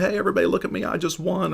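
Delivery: put-on very high, boastful, show-off schoolyard kid voice. Speaker acts out a kid on the school ground, imitating a boastful kid. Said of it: "like that young kid or on the school ground".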